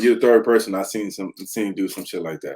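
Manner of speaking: usual speaking voice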